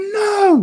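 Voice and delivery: high-pitched, horrified cry from several voices.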